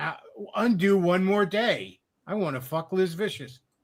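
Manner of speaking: synthetic robot voice with uneven, off-tempo word timing. Describing an AI robot spirit and what it says, clearly robotic voice. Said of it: "a clearly robotic voice going".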